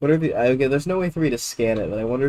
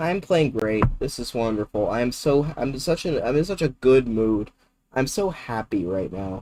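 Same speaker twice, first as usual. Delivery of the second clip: forced, sarcastic, fake cheerfulness. Commenting on just losing a pawn in a game: sarcastic fake joy. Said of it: "Can you not hear the joy in my voice".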